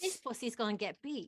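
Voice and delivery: weak put-on New Zealand accent, not quite landing. Quoting a man's line while attempting a New Zealand accent. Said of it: "My New Zealand's not there".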